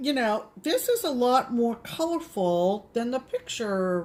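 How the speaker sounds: normal talking voice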